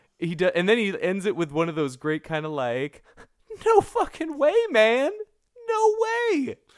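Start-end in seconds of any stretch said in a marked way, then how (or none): 3.7-6.6 very high, raised, loud outburst. Retelling how an actor ends his talking, doing a Bill Paxton impression. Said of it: "doing like a Bill Paxton impression".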